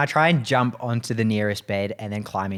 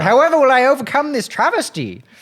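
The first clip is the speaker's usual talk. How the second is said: voice pitched higher than usual; 8 dB louder than usual. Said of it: "pitch your voice up".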